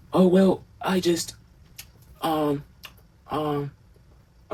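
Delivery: very slow, hesitant, fumbling for words. Retelling how the younger brother stalled while thinking up an excuse: imitating Jonathan stalling for an excuse. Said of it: "in his point of view".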